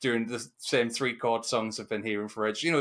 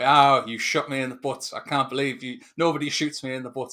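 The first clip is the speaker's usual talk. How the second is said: wooden, flat, emotionless, slightly raised delivery; 2 semitones higher, 6 dB louder than usual. Retelling a villain's line from the film: imitating flat emotionless line delivery. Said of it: "he says with no emotion".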